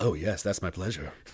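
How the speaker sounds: mock seductive delivery. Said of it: "And it was kinda sexual".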